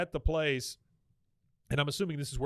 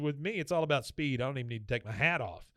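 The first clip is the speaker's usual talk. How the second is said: usual speaking voice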